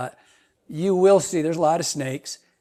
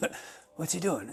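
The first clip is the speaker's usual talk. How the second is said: very quiet, weak, bad British accent attempt; 12 dB quieter than usual. Retelling watching someone smash his head into rocks, quoting Gary: imitating Gary, bad British accent. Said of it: "I can't do a British accent".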